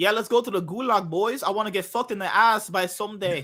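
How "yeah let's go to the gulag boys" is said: put-on Russian accent, higher. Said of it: "You sound like that fucking Russian dude".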